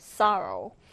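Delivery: first syllable of sorrow stressed. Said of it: "첫 음절에 강세를 두고".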